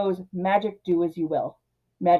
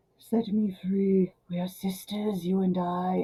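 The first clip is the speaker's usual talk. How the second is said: eerie, creepy harpy voice, low, soft and slow; 6 dB quieter than usual. Recounting the harpy's lines in a creepy low harpy voice. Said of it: "creepy low voice".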